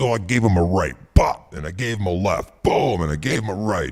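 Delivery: every "bop" and "boom" punched out hard. Retelling a radio bit where the Champ wins a bar fight: deep voice imitating the Champ. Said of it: "you're using a deep voice like Johnny".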